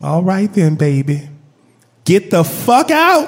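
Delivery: sweetest, kindliest, syrupy, gentle grandma voice. Retelling what the other twin grandma said, imitating her sweetest, kindliest voice. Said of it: "in the sweetest, most kindliest voice you've ever heard".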